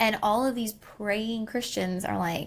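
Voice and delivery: normal talking voice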